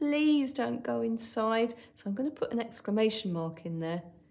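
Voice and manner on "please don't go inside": earnest, heartfelt, slow, strong pleading. Someone writing a story aloud shows how a character says her line, strong pleading voice. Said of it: "quite a strong pleading voice".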